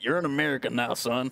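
put-on cowboy accent. Asked by another speaker to show off an accent: cowboy accent. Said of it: "you do a mean cowboy accent".

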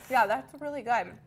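talking with mouth full. Tasting a sweet and spicy dish, the speaker comments while talking with mouth full. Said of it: "I'm talking my mouthful here".

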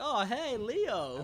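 play-acted casual nonchalance. Recounting how a woman greeted Leo, imitating Linda's nonchalant tone. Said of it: "She's just like".

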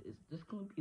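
voice cracking way up high.

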